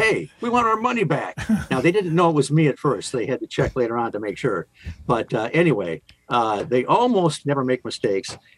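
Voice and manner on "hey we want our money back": high-pitched yell. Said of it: "And so I yelled at them".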